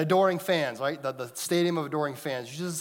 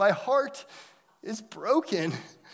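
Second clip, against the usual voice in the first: put-on, very slow, high, pitiful four-year-old voice; 5 semitones higher than usual. Retelling what four-year-old Miles said, imitating Miles's pitiful voice. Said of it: "in the most pitiful voice you could ever hear a 4-year-old muster".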